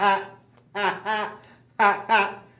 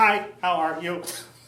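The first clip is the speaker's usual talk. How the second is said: put-on robot voice; 3 semitones lower than usual. Greeting the show's host at a sidekick interview: Skippy the Robot voice. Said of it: "Should I talk like that too".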